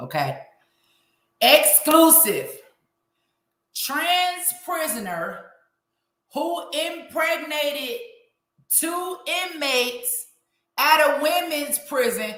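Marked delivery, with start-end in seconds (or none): 1.4-12.3 very slow, deliberate, word-by-word reading. Speaker tells listeners they'll reread a headline, reading real slow. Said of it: "I'm gonna read this real slow".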